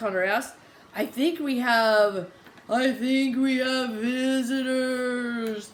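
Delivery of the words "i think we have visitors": slow, spooky ghost voice, "visitors" drawn out. Narrating a story where the group hears a voice up ahead, in a ghostly voice. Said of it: "The ghostly voice continues".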